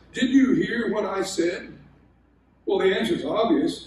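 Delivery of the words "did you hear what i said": play-acted frustration, exasperated and fed up. Retelling what he would ask on finding chores undone: imitating a frustrated tone. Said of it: "in a rather frustrated tone".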